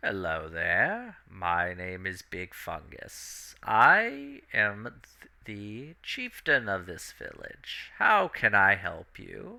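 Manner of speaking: swooping creature voice, wide pitch swings, stretched "I". Describing the scene, the narrator voices a ten-foot mushroom chieftain: Big Fungus creature voice. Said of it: "a very large mushroom creature".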